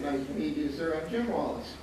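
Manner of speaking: ordinary talk, nothing marked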